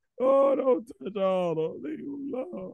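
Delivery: mock very high, swooping, tearful crying voice. Retelling watching a scary scene as a kid: imitating own past crying. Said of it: "sitting at home crying like".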